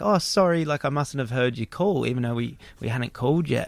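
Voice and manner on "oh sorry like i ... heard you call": put-on meek, nice, humble apologetic manner. Retelling how Barry apologized for missing their call: imitating Barry's humble manner. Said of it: "such a nice, humble way".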